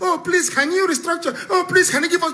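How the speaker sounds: high, laughing, mock pleading tone.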